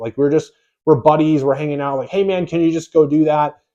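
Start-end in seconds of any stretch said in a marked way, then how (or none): 2.1-3.5 friendly, laid-back, casual buddy-buddy tone. Retelling how they asked team members to do tasks: imitating own casual buddy-like talk. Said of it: "talking like a friend".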